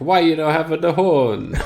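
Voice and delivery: mock, put-on film-style Italian accent. Quoting an italian family from a film, in an offensive italian accent. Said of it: "That's the offensive accent that's in the film".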